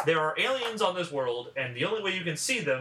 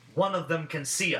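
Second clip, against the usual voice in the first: ordinary delivery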